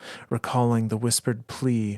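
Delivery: plain reading voice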